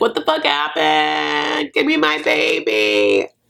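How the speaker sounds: play-acted tearful sobbing in low, swooping crying voice. Retelling how a mom in a car reacted about her baby, imitating someone crying. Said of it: "She's like crying".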